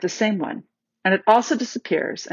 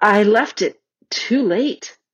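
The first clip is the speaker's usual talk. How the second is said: slow, sheepish, self-conscious, embarrassed voice. Susan answers Peter after the shooting match, in an embarrassed voice. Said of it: "said Susan in an embarrassed voice".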